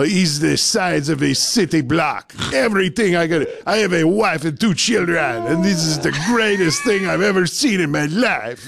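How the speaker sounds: bad, terrible put-on French accent. Retelling a French gentleman filming himself walking through Costco, terrible French accent. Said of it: "that's a terrible French accent".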